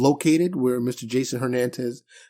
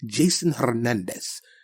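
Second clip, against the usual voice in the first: put-on Spanish accent on a name; 4 dB quieter than usual. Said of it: "why would I say it like that?".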